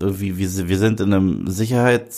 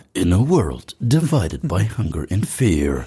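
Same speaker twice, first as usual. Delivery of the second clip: cheesy, trashy American movie-trailer narrator voice. Comparing dubbed trailer voices, demonstrating the American one in a cheesy trailer voice. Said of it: "amerikanische Trashstimme ist ja immer".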